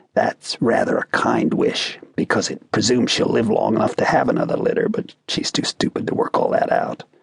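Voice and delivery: hushed, whispered aside. The philosopher turns from her to whisper to the narrator, whispering. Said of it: "Then to me he whispered".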